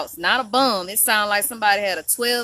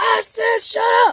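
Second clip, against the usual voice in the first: very high, shrill, loud, booming, drawn-out yell; 14 semitones higher, 5 dB louder than usual. Retelling what he said to shut someone up: imitating a loud deep-voiced yell. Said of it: "it was so loud. He had deep undertone voice".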